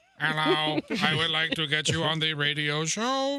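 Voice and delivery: very slow, deep, mechanical robot voice. Joking about phoning someone who ignores robocalls: robot voice. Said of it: "Don't talk to him in a robot voice".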